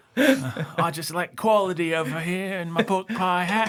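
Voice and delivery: condescending fake Cockney accent, very high pitch. Joking after another speaker's remark: condescending fake cockney accent. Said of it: "condescending fake Cockney accent".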